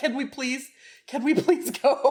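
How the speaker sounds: earnest, repeated begging plea. Retelling how the other speaker begged to leave the porch: imitating someone begging. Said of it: "I begged y'all first just to leave".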